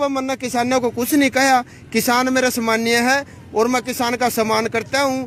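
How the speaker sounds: ordinary talk, nothing marked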